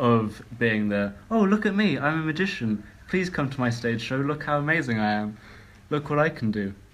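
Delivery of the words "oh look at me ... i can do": pitched-up, pompous, boastful showman voice. Discussing The Magician's Dilemma, the speaker mocks magicians with a mocking magician impression. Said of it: "if you're going to say it like that".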